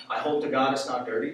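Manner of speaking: ordinary talk, nothing marked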